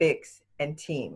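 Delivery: slow, spaced-out.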